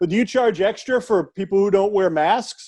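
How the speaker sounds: ordinary delivery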